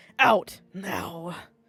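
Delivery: low, loud, gritty, rough-edged voice. Reading a second-person story aloud, redo a character's line in a gritty voice. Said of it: "I wanted to sound more gritty".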